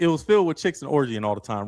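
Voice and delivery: ordinary talk, nothing marked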